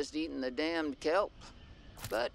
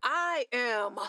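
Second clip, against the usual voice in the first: with conviction, higher; 9 semitones higher, 3 dB louder than usual. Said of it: "I said like you mean it".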